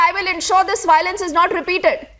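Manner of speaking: ordinary talk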